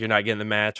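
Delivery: ordinary delivery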